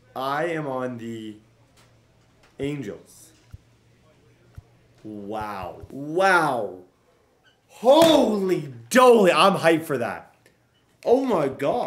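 loud, shocked, stunned disbelief, drawn-out wow. Reacting to news of joining a new team, shocked. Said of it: "If I sound like I'm a little bit of shock".

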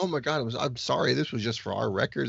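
usual speaking voice

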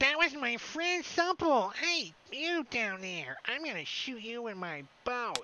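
very high, put-on, squeaky goblin voice. Voicing a goblin who yells down at the party: goblin voice. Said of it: "He says that in Goblin".

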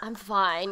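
put-on resigned teenager voice. Retelling own past replies to an uncle: imitating a resigned teenager. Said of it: "like a resigned teenager".

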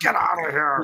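imitated angry man's voice. Retelling a mall performer's reaction to being taunted: imitating an angry man. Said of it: "He got so mad at us. He's like".

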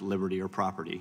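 ordinary talk

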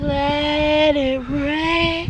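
very slow, stretched slow-motion voice. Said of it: "Oh, slow motion time".

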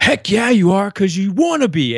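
very high, loud holler. Retelling how a nutrition coach pointed and answered: imitating someone yelling. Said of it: "he pointed at me and yelled at me".

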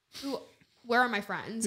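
ordinary delivery

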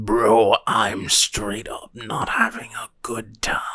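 low monster creature voice. Speaker tries out a voice for the captive monster's line, in an SCP-682 voice. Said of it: "Let's try a 682 voice".

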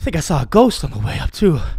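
winded, breathless. Back from closing the car windows, out of breath. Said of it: "I'm out of breath".

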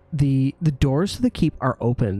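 ordinary talk, nothing marked

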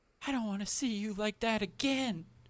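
pitched well up, in character. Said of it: "This is my Lily voice".

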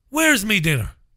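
put-on Irish accent. Showing how the Irish would say it, in an Irish accent. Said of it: "That's how the Irish would say it".

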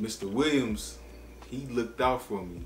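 normal talking voice

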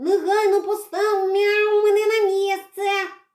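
loud yelling. Redka, caught and held, shouts at his captor: yelling. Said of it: "репетував Редька".

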